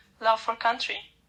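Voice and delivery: normal talking voice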